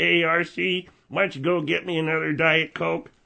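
mechanical, robotic electrolarynx buzz. Friend imitating his uncle, who speaks through a voice box: uncle's voice-box voice. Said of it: "Your uncle has a voice box?".

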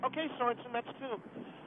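quiet aside.

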